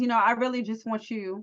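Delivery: plain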